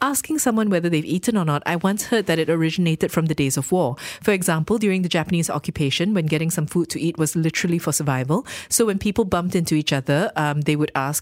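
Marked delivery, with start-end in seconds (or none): none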